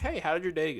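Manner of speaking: plain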